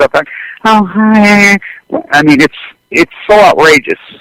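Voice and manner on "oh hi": put-on high, fake female voice. Speaker imitates how the women in the story talk, in a fake woman's voice. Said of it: "the women have fake voices".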